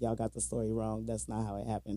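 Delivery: ordinary delivery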